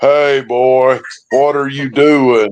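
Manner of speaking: put-on voice, deepened very deep, slow. Retelling speaking through the camera mic to a man nearby, deepened voice real deep. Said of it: "deepened my voice real deep".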